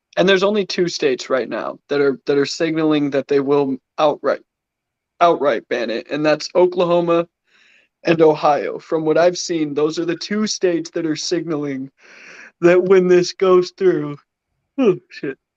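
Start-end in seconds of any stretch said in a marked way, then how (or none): 9.8-15.4 yawning mid-sentence, words stretched through a yawn. After a long day, explaining which states plan bans, talking through a yawn. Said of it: "Sorry, yawning".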